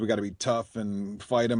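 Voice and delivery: ordinary talk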